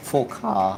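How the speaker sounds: low voice cracking and breaking on a word. Race commentator calling cars into the final corner, voice cracking. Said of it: "my voice cracked".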